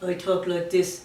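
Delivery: flat monotone, pitch level, neither up nor down. Recalling early voice development for the puppet, showing the flat monotone. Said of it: "you had this sort of monotone".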